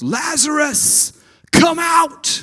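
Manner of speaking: very high-pitched, very loud calling shout. Reading the verse aloud where Jesus calls the dead man out: loud calling out. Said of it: "Jesus called out in a loud voice".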